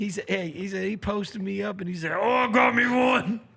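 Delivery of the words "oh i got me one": put-on monster voice, very loud, very slow, drawn-out. Retelling how Sam Cassell talked while posting up: imitating Sam Cassell's Cookie Monster voice. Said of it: "sounded like the Cookie Monster".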